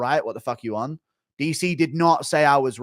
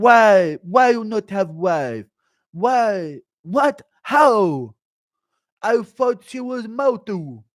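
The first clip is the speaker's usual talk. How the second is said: high, loud, very slow, word by word; 7 semitones higher, 5 dB louder than usual. Announcing and doing a bit where he questions the Queen, as an impression of Paulo. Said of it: "Impression of Paulo asking the Queen".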